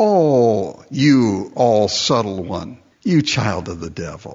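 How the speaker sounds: put-on condescending, very slow drawl, long drawn-out "oh". Imagining Paul saying the words, mock-condescending Paul. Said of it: "with a real condescending tone. You know, like".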